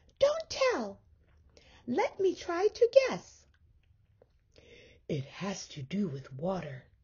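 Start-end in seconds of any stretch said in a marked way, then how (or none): 5.1-6.8 whispering. Mole answers Mouse, who wants to guess his surprise: whispered. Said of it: "whispered Mole".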